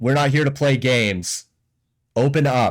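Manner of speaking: rough, gruff, no-nonsense guard voice. A town guard pounds on the door to wake someone up: gruff town guard voice. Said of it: "in a gruff voice".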